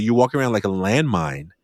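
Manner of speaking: plain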